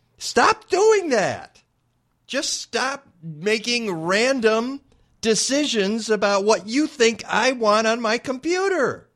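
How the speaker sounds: high, drawn-out, exasperated, frustrated yell. Ranting at computer geeks making random decisions: yelling in frustration. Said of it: "Yeah, I'm yelling at you".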